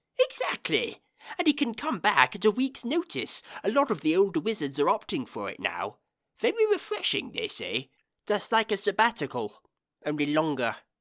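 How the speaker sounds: cheerful voice bouncing around in pitch. Narrator reading a story, the professor answering a question: cheerful Professor Pelk voice. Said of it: "said the professor cheerfully, / and raised the jar to his mouth. / said Professor [name]. / said the professor cheerfully".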